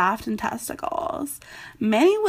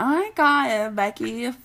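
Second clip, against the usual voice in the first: put-on trashy young woman voice.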